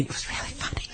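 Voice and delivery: soft whispered aside. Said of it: "she whispered to me".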